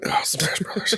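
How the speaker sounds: put-on whispery, breathy, disappointed grandmother voice. Joking about a letdown video game: put-on disappointed grandmother voice. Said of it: "I'm a disappointed grandmother going".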